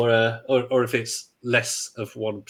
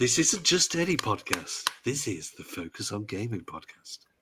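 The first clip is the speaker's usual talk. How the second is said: ASMR voice, quieter; 6 dB quieter than usual. A co-host shows how to advertise next week's podcast; ASMR voice. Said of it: "I could use my A S M R voice".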